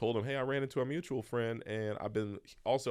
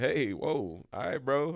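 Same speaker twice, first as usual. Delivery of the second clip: acted, cheeky, wisecracking, sarcastic, smart-aleck jab; 4 semitones higher, 4 dB louder than usual. Retelling a reply to a booker's refusal: retelling own smart-ass remark. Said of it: "my little smart ass".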